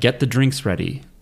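plain

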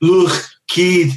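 put-on Liverpool accent. Speaker mimics a former tour manager from Liverpool, imitating a Liverpool accent. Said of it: "That's exactly how he sounds".

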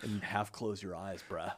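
hushed, quiet Southern California bro voice. Speakers joking about the faces made for a voice, one replies in SoCal bro voice. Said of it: "When you do that voice".

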